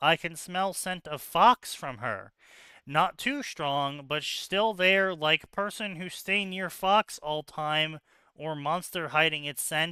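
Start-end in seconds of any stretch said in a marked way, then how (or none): none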